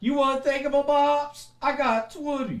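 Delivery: put-on mermaid character voice.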